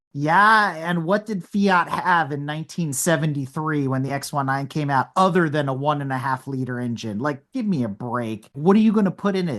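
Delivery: ordinary delivery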